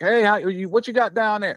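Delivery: play-acted, very high, far-carrying hollering call. Showing how he called to the man on the other end of the tree, hollering. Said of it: "raise my voice to holler".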